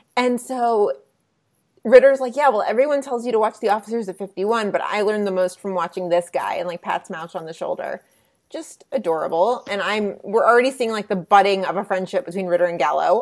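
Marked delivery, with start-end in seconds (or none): none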